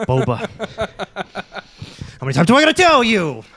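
big, high, swooping mobster voice. Imitating an actor showing up in a Star Wars crime family story. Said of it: "He's like".

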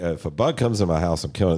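ordinary talk, nothing marked

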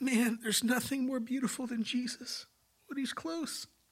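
crying while talking. Recalling when god showed up in the church, crying while talking. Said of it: "I can't talk about this without crying".

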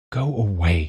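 ordinary delivery

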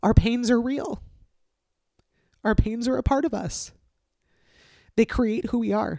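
speaking through tears. The speaker tells listeners they will hear the crying: crying while talking. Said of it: "As you'll hear, I'm crying".

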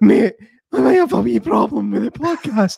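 very high, rough, creaky voice nearly gone. Showing how a friend sounded with no voice: imitating Kevin's lost voice. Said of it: "Pretty good impression".

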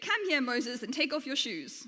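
usual speaking voice

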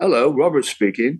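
put-on English accent, phone voice. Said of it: "in true English style".

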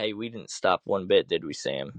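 ordinary talk, nothing marked

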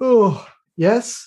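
drowsy, sleepy voice, yawning through the words. Player's character opening the door to a guard, acting sleepy, yawning. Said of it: "I'm going to yawn just like".

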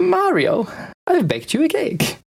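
very high, lilting, regal-sounding tone. Quoting the note from the game in Princess Peach's voice. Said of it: "That was spot on".

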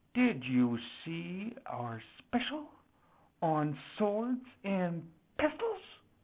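low, quiet, held-back and controlled delivery. Reading a story, the narrator voices a character questioning a young man, low, restrained tone. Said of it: "In a low, restrained tone".

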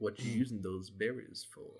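lurking, shadowy stranger voice. Voicing a stranger behind the player, a long shadow: shadowy stranger voice. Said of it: "you just hear a voice that goes".

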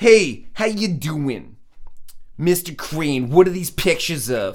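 put-on slow, drawling Italian accent. Reenacting a courtroom scene, the speaker addresses the jury and a witness in Vinny Gambini Italian accent. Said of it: "This is my Italian accent".

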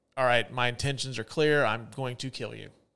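ordinary talk

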